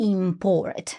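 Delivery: second syllable of import stressed. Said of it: "The verbs have the stress on the second syllable".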